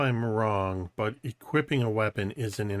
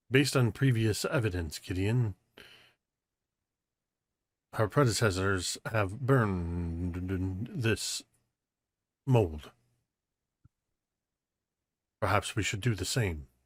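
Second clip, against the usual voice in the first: confiding aside, lingering on "burned". Speaking in character next to a companion in a cave: speaking very quietly. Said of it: "I'm saying this very quietly next to Gideon".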